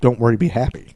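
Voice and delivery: ordinary talk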